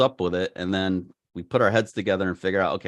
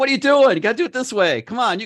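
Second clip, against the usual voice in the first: yelling, higher and louder; 6 dB louder than usual. Retelling urging someone to fly a drone: imitating own past yelling. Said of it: "I yelled at her a lot".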